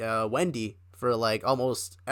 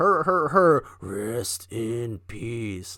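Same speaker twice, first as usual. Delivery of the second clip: very slow, drawn-out promo announcer voice; 3 dB louder than usual. Retelling how a promo ended: Undertaker voice. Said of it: "he ended the promo in his Undertaker voice".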